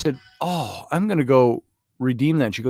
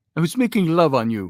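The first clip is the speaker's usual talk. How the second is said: foreign accent of a learner of English; 4 semitones higher than usual. Explaining a remark the others called gross, redoing it in a non-native English accent. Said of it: "saying it like I was somebody who doesn't speak English".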